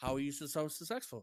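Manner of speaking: normal talking voice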